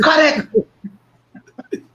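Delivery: put-on very high shout, kept light and mild. Retell how your uncle shouted when the celebration's music changed to reggae, imitating an uncle's loud shout. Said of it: "my uncle shouted in a loud voice".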